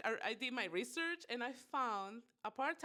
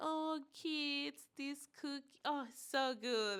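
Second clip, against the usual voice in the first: put-on near-crying tearful voice, pitched higher; 4 semitones higher than usual. Retelling a grandfather's reaction to a salty homemade cookie: imitating grandpa almost crying. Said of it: "he was almost crying when he was eating it".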